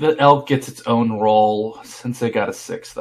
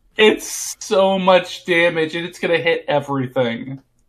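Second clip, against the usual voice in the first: pitched-up fake crying through the words; 6 semitones higher than usual. Describing a fireball spell's damage to the group: mock crying. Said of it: "Why are you crying".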